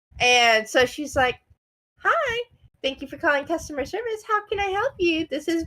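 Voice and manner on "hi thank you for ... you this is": sweet, kind, high, youthful, polite voice. Describing a customer service worker answering calls, imitating her sweet, kind, young voice. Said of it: "sounds very sweet and very kind and very young".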